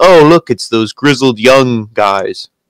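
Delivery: imitated flat, unexcited commentator voice. Mocking a commentator's bored call of a tag team's return: imitating Kevin Owens, flat and uncharismatic. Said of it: "the fucking charisma vacuum, Kevin Owens".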